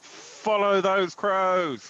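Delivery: heroic, loud, high rallying shout. Declaring what the character shouts while running past ghosts: shouting. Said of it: "basically I just shout".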